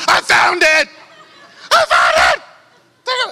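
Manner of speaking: put-on very slow, drawn-out, high, swooping shrieks of joy. Retelling skipping through a store after finding the outfit: screaming excitedly. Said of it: "Just screaming at random people".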